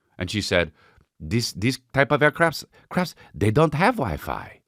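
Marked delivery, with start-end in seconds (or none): 1.2-4.5 slow, put-on French accent, airline attendant voice. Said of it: "what's the French accent?".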